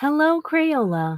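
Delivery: mechanical, robotic, machine-like delivery. Asked to say hello on stream, a girl greets crayola in a robot voice. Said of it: "She sounds like a robot".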